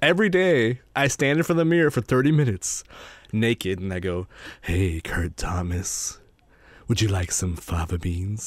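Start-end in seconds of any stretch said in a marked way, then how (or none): 4.6-8.5 very low, hushed, soft villain voice. Speaker describes practising daily in the mirror, then does his Hannibal impression. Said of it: "my Hannibal impression".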